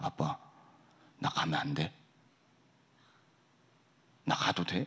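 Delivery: hushed, quiet, low voice. A father recounts his child coming to him one evening, in a quiet, low voice. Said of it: "조용히 와가지고 낮은 목소리로".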